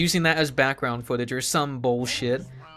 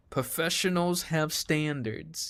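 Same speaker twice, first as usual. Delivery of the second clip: put-on poorly done, unconvincing Australian accent; 3 semitones higher, 5 dB quieter than usual. Quoting the Team Fortress 2 sniper's line he takes to heart: bad Sniper Australian accent. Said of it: "exaggerated Australian accent".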